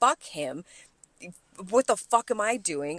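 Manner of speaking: angry, heated, ranting voice. Recounting unloading alone with him in his office, retelling an angry rant. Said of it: "I am pissed".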